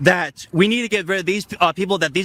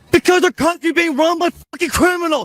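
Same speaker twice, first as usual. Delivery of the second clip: furious yelling, higher and louder; 9 semitones higher, 4 dB louder than usual. Answering why they are getting so angry: angry shouting. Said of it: "So angry".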